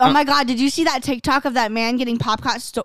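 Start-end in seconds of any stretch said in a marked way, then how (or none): none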